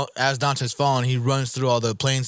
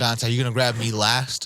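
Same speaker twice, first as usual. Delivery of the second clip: plain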